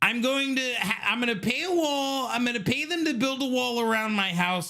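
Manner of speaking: very high-pitched, squeaky, mocking parody voice. Mocking a comedian's impression of a politician: mocking Trevor Noah doing Trump. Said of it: "I'm Trevor Noah doing Trump".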